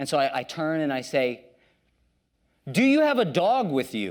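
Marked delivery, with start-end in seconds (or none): 2.7-4.1 loud, carrying, pitched-up blatant delivery. Retelling asking someone behind about a dog: imitating own loud question. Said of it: "I say it loud like that".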